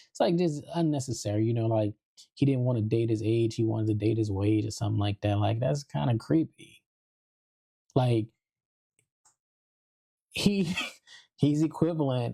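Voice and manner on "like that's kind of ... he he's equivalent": speech broken up by laughter. Calling a man's behavior creepy, laughing while speaking. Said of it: "I'm sorry for laughing".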